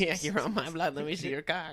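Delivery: mock Los Angeles accent. Showing the stereotypical la chicano voice after another speaker names it: stereotypical la chicano accent. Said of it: "you do a stereotypical LA Chicano".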